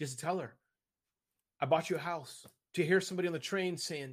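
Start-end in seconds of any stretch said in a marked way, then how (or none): 0.0-2.5 voice on the verge of tears. Describing giving to people in need, almost crying while speaking. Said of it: "I'm almost crying as I say it".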